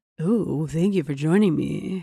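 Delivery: low, smooth late-night radio host patter. Playing a nighttime radio DJ welcoming listeners: late-night radio DJ voice. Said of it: "maybe you could be a nighttime, like".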